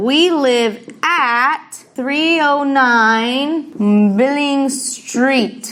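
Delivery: very slow, careful, deliberately spaced delivery.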